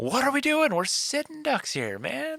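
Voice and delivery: very high, swooping, shouted delivery.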